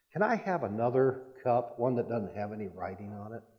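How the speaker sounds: hushed, very quiet, low-voiced, barely heard. Retelling asking the waitress for a cup without writing on it, very quiet and hushed. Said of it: "very quietly said".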